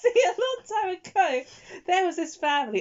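very high-pitched, put-on German accent. Acting out a story for a listener who asked, German accent. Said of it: "So you went German instead".

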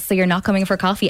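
ordinary delivery

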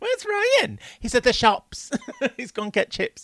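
bad put-on northern English accent, very high, swooping. Speaker imagines a Doctor Who scene, bad Coronation Street impression. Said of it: "Now I sound like a bad impression of Coronation Street".

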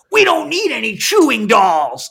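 mock elf yelling, loud, high, swooping. Retelling a Christmas show scene, the head elf scolds Hermes: imitating the head elf yelling. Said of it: "that's just yelling at him with that voice".

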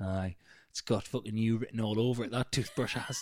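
imitated under-breath mutter. Retelling what she said behind him; imitating a mutter under breath. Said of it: "she just under her breath went".

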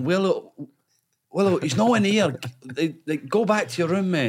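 mock loud calling out, pitched high. Retelling calling out from bed to a teammate outside: imitating own past shouting. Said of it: "And I'm shouting".

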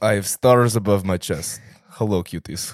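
loud, put-on Russian accent. Greeting listeners as a joking bit: put-on russian accent. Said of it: "I love that accent. The Russian".

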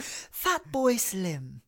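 put-on plummy upper-class posh accent, swooping pitch. Reacting to a line from a conference speech, saying it in a posh accent. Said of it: "I love that in a fucking posh accent".

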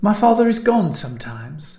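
uneasy and nervous. A girl confiding in someone; nervous admission. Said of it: "Helen admitted nervously".

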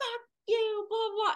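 acted, very high, furious shouted cussing. Retelling a phone fight outside her car: imitating her own yelling. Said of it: "yelling this at the gas station".

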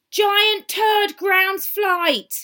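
loud, very high, all-caps headline-style delivery. Reading out a headline someone wrote in capitals: reading a headline in capitals. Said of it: "I say it like that because he wrote it in capitals".

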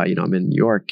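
mock-sheepish, sounding sheepish. Retelling telling the managing partner where he was: retelling a sheepish reply. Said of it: "I kind of sheepishly said".

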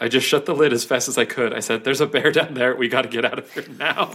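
ordinary delivery

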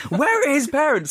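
very high, shrill mock shriek. Retelling what a commentator said, matching the crowd: imitating someone screaming. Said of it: "that's exactly what we're screaming".

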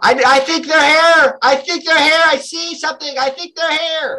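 shouting, very high. Voicing a servant who spots something in the bushes: shouting. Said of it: "As he shouts it out".

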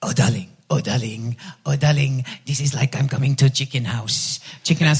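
put-on Turkish accent. Speaker quotes their husband calling from the balcony, Turkish accent impression. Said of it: "I'm doing my Turkish impression".

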